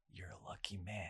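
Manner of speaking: mock-sinister delivery. Retelling what a man said while staring as they passed; mock-sinister delivery. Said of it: "the way he said it that time was like, kind of sinister".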